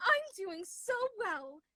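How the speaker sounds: high-pitched princess-doll voice. Playing a bit with a co-speaker, answering in your Barbie princess voice. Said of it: "This is our Barbie princess voice".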